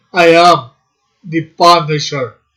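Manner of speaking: booming, declaiming action-hero voice, like a movie cyborg. Trying out a line a little like the Terminator would say it; Terminator voice. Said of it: "In that voice".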